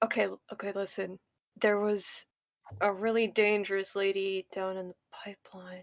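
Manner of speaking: hushed, whispering voice. Speaking in thieves' cant to the others, telling of a danger, whispering. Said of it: "I'm gonna whisper".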